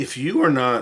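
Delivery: voice breaking and cracking mid-phrase. Speaker addressing adults about growth funds when their voice cracks. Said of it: "my voice cracked".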